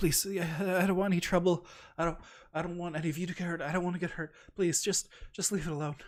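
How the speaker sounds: weak, high begging. Voicing a weak dragonborn answering a player's question: pleading. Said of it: "we already know they don't like stuff".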